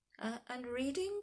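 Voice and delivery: high, croaking, rough-edged voice. The headmaster, questioning George, asks croaking. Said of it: "croaked the headmaster".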